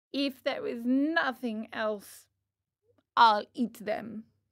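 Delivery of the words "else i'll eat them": ordinary delivery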